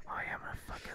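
soft, hushed whisper under the breath. Recalling paper-thin walls with her sister in the next room, retelling a whisper. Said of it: "So I'd be like whispering like".

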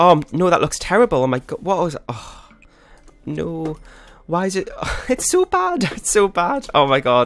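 panicking, stretched-out voice. Building a roof in a game and making a mess of it, panicking. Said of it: "i'm panicking now".

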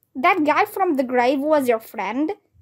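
usual speaking voice

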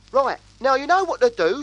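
very high, shrill, bossy scolding tone. A storyteller voices a cockatoo giving sharp orders and warnings to the other animals before a race. Shrill and bossy.

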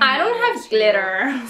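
put-on Californian valley girl accent. Showing that some words need a Californian sound, in a valley girl accent. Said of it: "I'm a valley girl".

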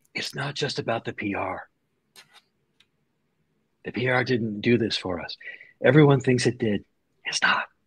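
very quiet, private, confiding tone. Retelling what an executive said after an acquisition: imitating a quiet remark. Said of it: "he very quietly said".

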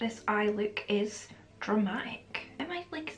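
soft, hushed, unvoiced whisper.

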